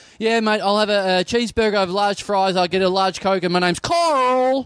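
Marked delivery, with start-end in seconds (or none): 3.5-4.7 put-on slow American accent, stretching Carl. Retelling ordering food, switching to an American accent for the name. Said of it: "I have to now say it in an American accent".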